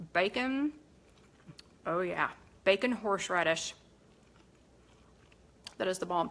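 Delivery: speaking with mouth full of food. Speaker tastes the dish just made, talking with a full mouth. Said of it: "I'm ending with a um, with a full mouth".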